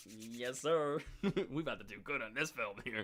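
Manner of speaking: slow, gleeful, gloating scheming voice. Imitating Blumhouse scrubbing their hands together over the film: gleeful scheming Blumhouse impression. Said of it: "Blumhouse is scrubbing their hands together".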